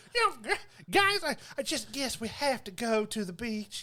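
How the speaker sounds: thick, slow, down-home Southern drawl. Retelling what girls in a movie say: imitating a heavy Southern accent. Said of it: "down home Southern speaking girls just like me".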